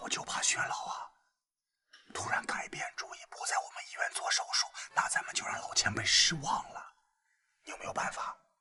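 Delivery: quiet, hushed voice. Alone in a room with one other person, discussing a senior patient's surgery: speaking quietly. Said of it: "你为什么那么小声说话呀？".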